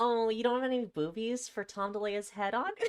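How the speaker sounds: very high, spiteful, giggly taunting tone. Showing the others how to deliver a taunting line, with a malicious little giggle. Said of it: "hit him with the really malicious little giggle too".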